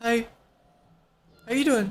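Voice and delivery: fumbling, awkward, uneasy little voice. Imitating a young neighbor who acts awkward around the speaker: imitating an awkward neighbor. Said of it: "He's so awkward".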